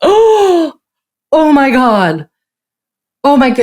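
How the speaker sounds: acted-out, very slow, high, loud, drawn-out alarmed panic. Acting out a mother who sees her child fall: imitating a panicked mom. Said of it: "goes into a panic".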